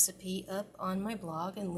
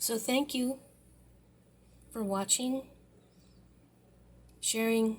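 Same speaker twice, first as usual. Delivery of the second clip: mumbled speech while chewing, mouth full; 3 semitones higher, 3 dB louder than usual. Closing a cooking video, thanking viewers while still munching. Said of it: "sorry, still munching".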